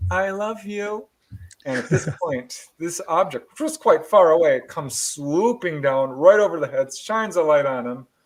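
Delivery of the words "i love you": put-on sweet, soft, high little-girl voice. Retelling a story, the speaker quotes the daughter's answer, imitating a sweet little girl voice. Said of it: "in her sweet little voice".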